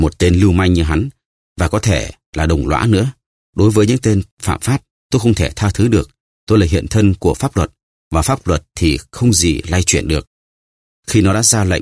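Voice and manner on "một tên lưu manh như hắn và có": usual speaking voice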